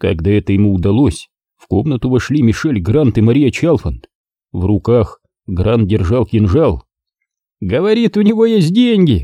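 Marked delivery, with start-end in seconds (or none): 7.6-9.2 giggled, very high-pitched, tittering delivery. One of the captors speaks to his companions about the captive; giggling. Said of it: "хихикнул Волтон".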